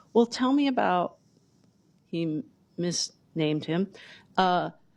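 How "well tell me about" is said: put-on sweetest voice, pitched higher. Retelling how a brother asked about the band member: imitating Tim's sweetest voice. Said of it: "he asked me in the sweetest voice".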